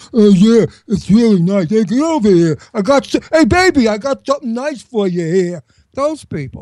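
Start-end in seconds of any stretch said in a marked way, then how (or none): 0.1-5.6 put-on dumb-guy Brooklyn accent, pitched higher. Mocking the Guidos from Ocean Parkway and Bay Ridge: stupid guy Brooklyn accent. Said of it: "it was like a stupid guy Brooklyn accent".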